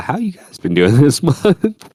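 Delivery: voice cracking and breaking up high. Speaker turns to the others after catching them up, voice cracking. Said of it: "That that was a voice crack".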